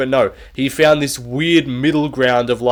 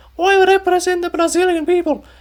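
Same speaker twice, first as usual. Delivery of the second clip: mocking put-on voice, pitched much higher. Mocking someone who claims to represent Brazilians, in a put-on high-pitched voice. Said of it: "make my voice this high pitched".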